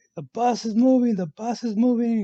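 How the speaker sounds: high, loud, panicked yelling out.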